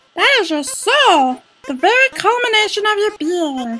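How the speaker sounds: very high, borky, flower-like put-on voice. Doing voices for viewers, speaking as Flowey in a Borky Flowey voice. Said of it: "This is a hard voice to do".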